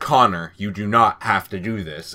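low, mechanical android robot voice. Retelling an android's line from a trailer: robot voice. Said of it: "in his robot voice".

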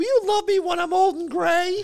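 very high put-on woman's voice performed by a man. Retelling a TV bit where a man plays the girlfriend: man imitating a woman's voice. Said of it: "in a voice like that".

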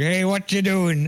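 mock screaming. Speaker recalling yelling at random people from a moped: retelling own screaming. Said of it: "I just scream at random people like".

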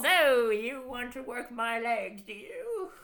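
put-on high, very slow rat character voice. Acting out a weightlifting rat character stroking his beard: put-on rat character accent. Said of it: "That's his accent".

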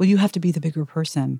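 quiet, gentle, soft low-toned murmur. Retelling a father overheard on the phone, in low, soft tones. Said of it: "in these low, soft tones".

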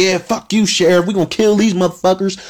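high, rowdy, whooping and hooting mob yell. Retelling a movie's shootout scene, the townspeople shooting guns: imitating hooting and hollering. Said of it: "hooting and hollering like".

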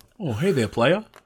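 mild, easygoing, gentle delivery. Voicing Sonic the Hedgehog as Steve Harvey: soft-spoken Steve Harvey impression. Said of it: "It's a little soft-spoken for Steve Harvey".

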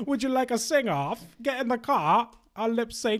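completely different fake British accent, pitched high. Mocking a talk show host's little games, in a put-on British accent. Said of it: "Doing a completely different British accent".

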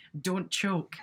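muttered, half under the breath. Retelling what someone said as the speaker was leaving: imitating a muttered jab. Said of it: "not quite so under her breath".

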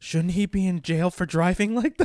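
put-on girl's whisper. Retelling what a girl on a bus said to her boyfriend, retelling a whisper. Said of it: "this girl whispers to her boyfriend".

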